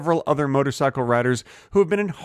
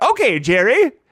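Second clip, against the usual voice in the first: put-on woman's voice; 9 semitones higher, 3 dB louder than usual. Retelling how a woman answered a request for a key to her house, imitating her voice. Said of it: "And she said".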